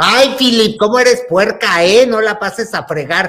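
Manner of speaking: loud, high-pitched scolding yell.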